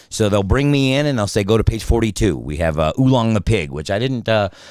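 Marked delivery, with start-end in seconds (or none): none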